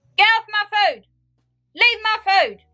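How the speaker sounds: shrill, very high, frantic, possessive-sounding shouting. Retelling shouting at Mum as she took the kebab: imitating own shouting. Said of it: "I just kept shouting".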